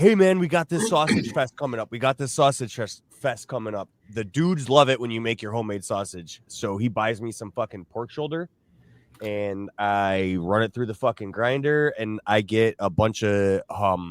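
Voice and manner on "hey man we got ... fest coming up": put-on restless, antsy, eager dad voice. Retelling how dad talks when August comes: imitating dad getting antsy. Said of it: "my dad always starts getting antsy. He's like".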